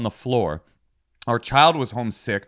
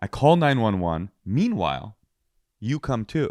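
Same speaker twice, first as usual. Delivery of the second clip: ordinary talk, nothing marked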